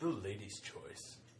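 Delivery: smooth, buttery, sultry, sexy voice. Asked to say it again even sexier, the speaker repeats the phrase in a smooth, buttery, sexy voice. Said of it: "Even sexier".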